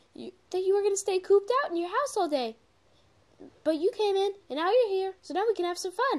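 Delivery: very high cartoon character voice. Reading a story aloud, attempting a character's lines in Pinkie Pie voice. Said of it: "I'm gonna try to do my Pinkie Pie voice".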